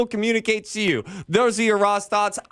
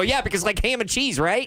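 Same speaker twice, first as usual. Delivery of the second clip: blurted out way too fast, rushed and rattled off. Retelling how an overexcited person butchers a joke: imitating saying it way too fast. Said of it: "you say it way too fast".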